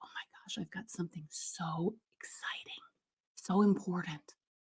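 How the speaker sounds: hushed, secretive whisper. Demonstrating to listeners how a quiet voice suggests secrecy: quiet secretive voice. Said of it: "quiet would be secrecy".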